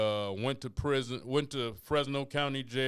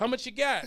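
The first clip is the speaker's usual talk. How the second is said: rattled-off, rapid, very high-pitched patter; 12 semitones higher, 4 dB louder than usual. Retelling walking into a dorm room full of guns: imitating someone talking fast. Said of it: "Talking fast".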